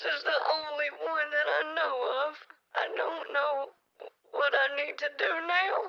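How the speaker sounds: pretend sobbing. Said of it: "And why are you crying?".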